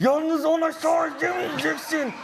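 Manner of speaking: very high-pitched, slow, angry yelling.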